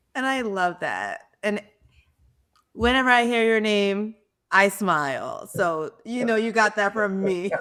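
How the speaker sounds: tearful voice, crying while speaking. Responding to someone describing the legacy they want: crying while talking. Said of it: "I'm sitting here crying too".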